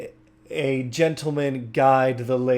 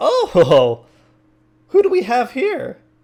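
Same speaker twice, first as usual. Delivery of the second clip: put-on gnome jester voice, higher and louder; 11 semitones higher, 8 dB louder than usual. Voicing a gnome jester greeting the players: Flutterfoot Zipwiggle voice. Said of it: "looks at you, um, and says".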